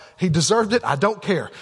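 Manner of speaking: ordinary talk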